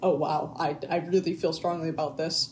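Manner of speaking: ordinary delivery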